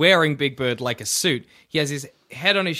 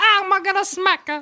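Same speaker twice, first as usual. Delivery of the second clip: cartoon Italian voice, much higher pitch; 3 dB louder than usual. Joking about what a hand puppet would say, in a Mario voice. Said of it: "I don't know why I did a Mario voice".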